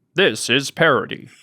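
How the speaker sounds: synthetic, mechanical robot announcer voice. Pitching a sketch gag where a disclaimer cuts in: robot voice. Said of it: "a robot voice that's like".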